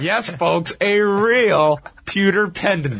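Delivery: utterly sarcastic, heavy and really drawn out. Imitating how a wrestling announcer hyped a mail-in offer, deliberately laying it on thick, in mock sarcasm. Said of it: "Jim Ross did this in the most sarcastic way ever".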